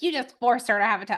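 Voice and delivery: ordinary talk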